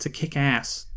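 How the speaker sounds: put-on American-accented delivery. Quoting how he would phrase it: American accent. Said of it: "as he'd say in his American accent".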